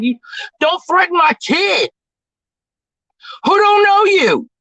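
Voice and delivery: mad, heated voice. Speaker blowing off steam about someone threatening their kid, angry. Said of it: "I'm mad, man".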